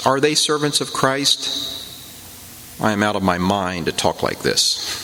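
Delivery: ordinary talk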